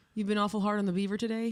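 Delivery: normal talking voice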